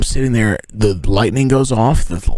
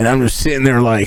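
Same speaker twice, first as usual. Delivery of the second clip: ordinary talk, nothing marked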